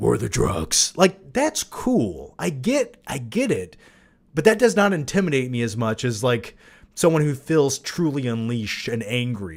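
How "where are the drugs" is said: deep voice from the chest, pitch dropped. Showing how a plain deep-voiced Batman would sound: deep voice. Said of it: "a deep voice like".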